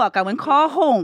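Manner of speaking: put-on thick pidgin English accent with matching pace. Recalling the summer he was sent back home to grandma, in a thick pidgin accent. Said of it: "my pigeon was tick".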